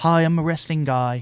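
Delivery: put-on British accent. Playing a british wrestling fan: put-on british wrestling fan voice. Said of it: "that's how they talk".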